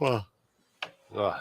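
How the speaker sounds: soft, mumbled words spoken mid-yawn. Host talking with guests about a racing weekend, yawning. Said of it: "sorry for yawning".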